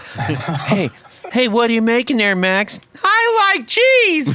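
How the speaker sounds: very high, squeaky, sing-song, swooping cartoon kid voice. Speaking to Max about his website, the speaker does a Ralph Wiggum voice. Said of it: "little Ralph Wiggum came to mind from The Simpsons".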